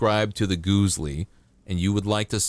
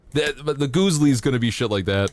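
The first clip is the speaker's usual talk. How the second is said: plain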